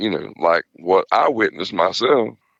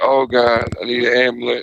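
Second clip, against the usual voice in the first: hurt man's hollering cry, half-voiced; 3 semitones higher than usual. Telling of a man hit by a patrol car, retelling a man hollering. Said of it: "he's hollering".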